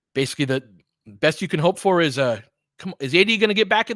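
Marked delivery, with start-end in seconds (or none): 3.0-3.9 shrill, loud, very high-pitched yell. Calling a Lakers basketball game play-by-play, yelling. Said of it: "I'm sorry. I'm yelling".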